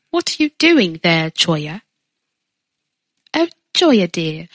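fake British accent, storybook style. Joking around in British accents with friends: put-on British accent. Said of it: "half of it's from Harry Potter".

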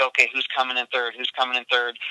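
ordinary talk

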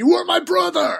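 high-pitched yell. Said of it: "literally yells to Anakin".

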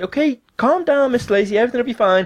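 high-pitched, soothing call-centre agent voice.

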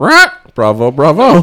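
very loud, high, squawking parrot voice. Picturing a magician who talks like a parrot, the speaker shows it: parrot voice. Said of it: "he'd talk like a parrot".

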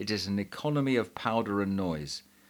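plain reading voice

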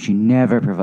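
ordinary delivery

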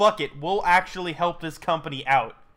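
ordinary talk, nothing marked

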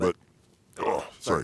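sputtering and choking, coughing through the words mid-sentence. Speaker breaks off talking, choking on something caught in the throat. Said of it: "Are you choking on something there?".

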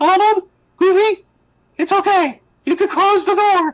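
very high, little cartoon mouse voice. Retelling a game scene where Mickey calls to Donald and Goofy, Mickey Mouse voice. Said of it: "And then and then Mickey's like".

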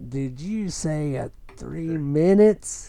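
put-on slow old man voice.

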